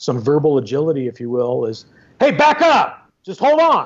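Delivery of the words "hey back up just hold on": very high, raised, commanding authoritative voice. Showing what he would say to keep someone at a distance, raised voice. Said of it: "then I might raise my voice".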